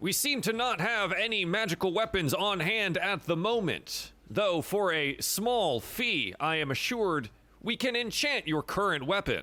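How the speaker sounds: very high pitched, slow, deliberate announcer voice. Narrating a character who turns to the players, announcer voice. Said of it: "I love this like announcer voice".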